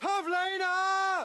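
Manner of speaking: high, slow, drawn-out call, name stretched out.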